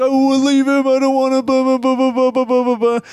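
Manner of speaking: mock bawling. Retelling the redhead in the cab, imitating someone bawling. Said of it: "She's just bawling".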